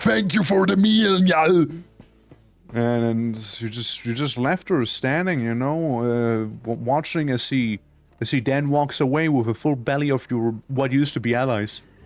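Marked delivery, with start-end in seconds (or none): 0.0-1.8 put-on thick, raised Austrian accent. Voicing a mercenary who thanks Njal for the meal: Arnold Schwarzenegger accent. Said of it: "can't shake that heavy Austrian accent".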